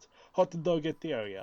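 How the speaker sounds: put-on French accent. Recounting how a company's name was first said on the show, in french accent. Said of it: "it's in a French accent".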